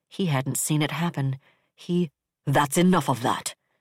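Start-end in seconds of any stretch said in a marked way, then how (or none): 2.5-3.5 sharp, hard, sudden snapped cut-off. Narrating a novel, he suddenly cuts her off, snapping in a hard voice. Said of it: "He snapped so suddenly, his voice so hard".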